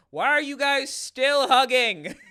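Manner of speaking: full-on, very loud, high, drawn-out scream. Retelling the seventh hug, imitating screaming at the TV. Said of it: "I literally was just screaming at the T V".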